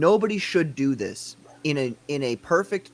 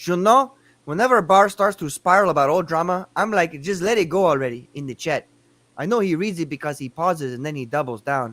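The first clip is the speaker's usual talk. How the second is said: put-on Spanish-accented delivery; 4 dB louder than usual.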